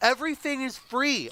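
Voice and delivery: high, exasperated, fed-up, frustrated voice. Speaker in a conversation with another person, getting frustrated. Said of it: "I'm getting very frustrated about this".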